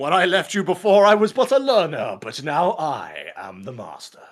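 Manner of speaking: loud, slow, booming movie-villain voice, swooping pitch. Quoting a line to a grown child, doing a Star Wars voice. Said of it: "go the fucking Star Wars route".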